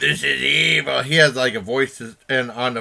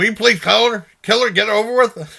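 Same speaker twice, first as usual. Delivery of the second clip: fed-up, annoyed pleading tone, pitched up; 8 semitones higher, 4 dB louder than usual. Retelling what dad said while watching a film together: imitating dad, annoyed. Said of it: "My dad's like".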